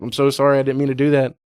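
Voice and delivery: mock crying, tearful voice. Retelling a war film scene where a soldier apologizes to a man: imitating a crying plea. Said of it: "crying and trying to talk him".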